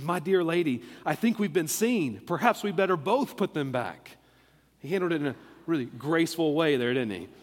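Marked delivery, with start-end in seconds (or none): none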